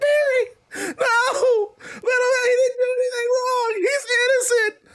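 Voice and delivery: very high, slow, hysterical sobbing. Voicing a woman crying over a man in handcuffs: acted hysterical crying. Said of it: "a hysterical Anna Adams crying over Barry".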